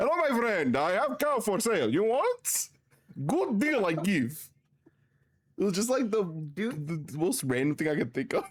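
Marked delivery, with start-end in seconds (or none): 0.0-4.4 put-on Armenian accent, broken English. Retelling running up behind a man to do his bit, in put-on Armenian trader accent. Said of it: "dressed up as my Armenian uh, trader getup".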